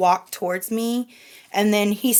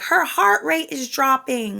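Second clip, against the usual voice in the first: mock high, urgent, alarmed cry; 5 semitones higher than usual. Recounting the mother screaming down the hall, retelling mother's scream. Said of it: "she was screaming down the down the hall".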